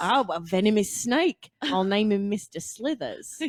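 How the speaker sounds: put-on, practiced Australian accent. Trying out an accent practice phrase, in an australian accent. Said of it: "practice phrases".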